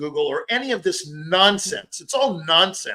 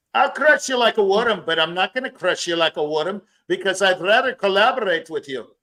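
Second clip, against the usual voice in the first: bad, rough put-on Scottish accent, not very good; 3 semitones higher than usual. Showing a line in a self-admitted weak put-on Scottish accent. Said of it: "that's a Scottish version".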